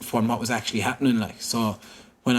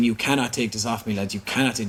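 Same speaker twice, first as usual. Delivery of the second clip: normal talking voice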